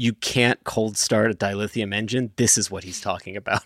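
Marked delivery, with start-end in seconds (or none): none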